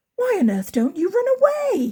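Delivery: shocked, aghast, horrified voice with high rising pitch. Reading a story aloud, a pig's question to another pig: horrified exclamation. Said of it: "exclaimed the horrified Pigling".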